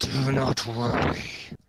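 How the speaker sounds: strained, loud voice of a huge dragon. Narrating a story, a creature on the viewing platform speaks in a strained but deep voice. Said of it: "a strained but deep voice".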